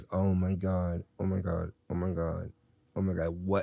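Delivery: utterly mortified, slow, wanting-to-vanish tone. Recalling being told no, not that one, the speaker retells being mortified. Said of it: "I was mortified".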